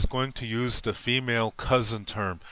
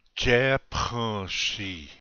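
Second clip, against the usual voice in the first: very slow, deliberate, careful pronunciation. Teaching a Korean greeting to the women in the audience: said really slow. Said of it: "I'll say it really slow".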